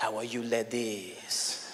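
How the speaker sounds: very slow, low, seductive put-on French accent. Speaker showing what different accents suggest, in a sexy French accent. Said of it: "You speak with a French accent".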